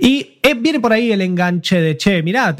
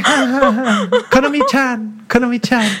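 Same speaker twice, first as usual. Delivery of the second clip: slow, drawn-out calling out; 4 semitones higher than usual. Retelling how a character in an anime talks: imitating how she talks. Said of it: "Y habla así, habla así, dice".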